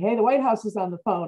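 put-on loud calling out, projected to carry far. Retelling her husband calling out to her in the garden: imitating someone yelling. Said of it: "my husband yells out to me".

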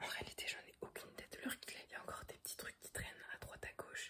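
hushed whisper. Speaker whispering so as not to wake her sleeping parents. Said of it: "Je chuchote parce que mes parents sont partis se coucher".

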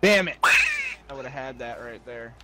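a little angry. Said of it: "someone's a little angry".

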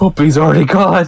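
high-pitched, gasping, alarmed. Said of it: "I was like".

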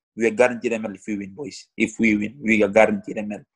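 ordinary talk, nothing marked

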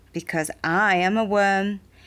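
plain reading voice

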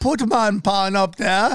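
put-on old grandmother character voice.

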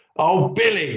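cross, high-pitched exclamation. Narrator reads Mum speaking to Billy after his lunchbox bursts open, speaking crossly. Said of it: "said Mum crossly".

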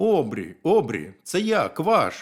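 slow, rising shout, as if from far off. Narrator reads the little frog calling to the beaver from afar, shouted. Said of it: "закричав Жабеня".

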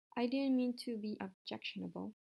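ordinary delivery

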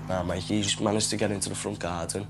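plain

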